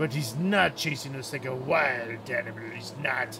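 very deep, low cartoonish crab voice. Talking about someone who could be chasing them, in a Krusty the Krab voice. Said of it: "Do I sound like Krusty the Krab?".

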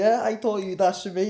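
put-on delivery, words broken up by laughing. Retelling own reply in a toilet before a fight, retelling laughing while talking. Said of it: "and I'm laughing, going".

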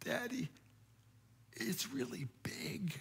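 put-on tiny, very hushed, awestruck child's whisper. A parent retells what the child whispered on seeing the killer whale, imitating an awestruck little whisper. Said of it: "he whispered to me in this little awestruck voice".

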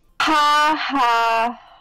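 depressed, gloomy "ha ha". Reading Sayori's line aloud as her character: depressed "ha ha". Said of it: "that was such a depressed ha ha".

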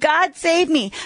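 put-on pleading cry. Imitating Christians who sit back and cry to God: imitating crying out. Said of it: "you're still crying".

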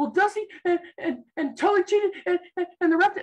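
put-on sobbing with hyperventilation. Retelling explaining a wrestling match to dad: imitating hyperventilating crying. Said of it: "through, like, hyperventilating, I'm like".

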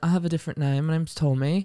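put-on British accent. Joking about having a different name: put-on British accent. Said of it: "when I have this accent".

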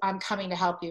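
normal talking voice

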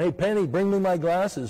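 calling out lightly, like a yell. A speaker retelling how Smith Wigglesworth called to his daughter Penny on stage, retelling a yell. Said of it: "he's yelling".

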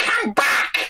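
very high-pitched creaturely voice. Calling after someone who was told to leave: Gollum voice. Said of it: "That was Gollum".

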